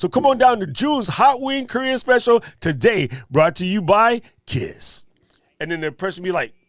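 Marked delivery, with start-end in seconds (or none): 0.0-5.0 raised, pitched-up radio commercial announcer read. Speaker performs an ad for june's hot wing special: radio commercial announcer voice. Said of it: "That sounded very radio".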